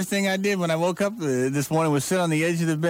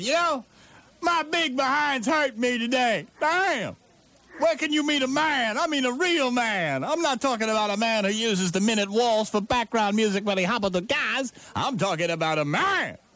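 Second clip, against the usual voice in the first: drawn-out, slow, shrieking talk-show woman voice; 6 semitones higher than usual. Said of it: "a woman broadcaster who does a shrieking show".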